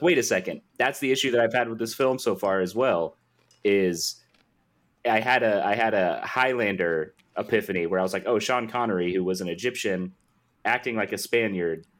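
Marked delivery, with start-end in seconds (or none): none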